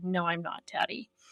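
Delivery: put-on under-breath mutter. Recalling always answering back to father, retelling muttering under breath. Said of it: "under my breath".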